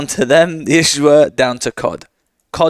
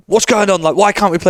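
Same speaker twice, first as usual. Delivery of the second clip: coach-like screaming, higher; 5 semitones higher than usual. Retelling a coach's reaction when the servers went down: imitating Dinge screaming. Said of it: "was basically screaming".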